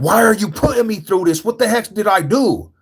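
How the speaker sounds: put-on, very high-pitched, hollered-out cry. Recounting yelling at the moon and at God, retelling a yell at God. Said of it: "I'm literally yelling at God".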